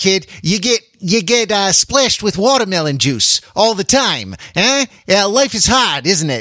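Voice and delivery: terrible put-on Australian accent. Voicing what a parent might tell a kid, the speaker uses a terrible Australian accent. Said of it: "I have a terrible Australian accent".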